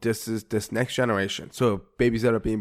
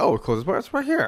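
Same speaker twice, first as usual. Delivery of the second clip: very high digital phone-assistant voice; 10 semitones higher than usual. Acting out a phone assistant answering a question: imitating Siri. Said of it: "Siri would be like".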